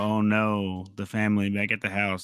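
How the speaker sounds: usual speaking voice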